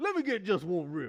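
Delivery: very high-pitched, loud, belted comic voice. Answering a chat question, trying a Chris Rock impression. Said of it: "Is that your Chris Rock impression?".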